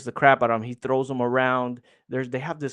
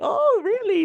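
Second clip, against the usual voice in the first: very high, exaggerated, overdone playful surprise. Retelling how a character reacts when asked for help: imitating an overdone playful reaction. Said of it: "he's playful with it, but he's, he overdoes it".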